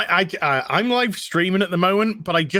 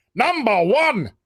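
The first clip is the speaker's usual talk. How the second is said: authoritative, commanding Shakespearean delivery, pitched up; 5 semitones higher than usual. Imitating Patrick Stewart's old voice: authoritative Patrick Stewart voice. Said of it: "He's had a very authoritative Shakespeare voice".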